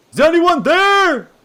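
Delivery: shrill, very loud, high-pitched yell. Calling out into a silent, empty town: yelling into the quiet town. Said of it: "just yell".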